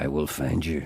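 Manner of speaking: very low, deep, angry voice. Prompted by another speaker to be like Liam Neeson; threatening Liam Neeson impression. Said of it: "he's threatening at the same time".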